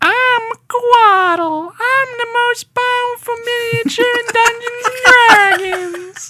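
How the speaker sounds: very high-pitched, slow creature voice. Recalling the little plays done when first working there, Quattle voice. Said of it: "that was my Quattle impression".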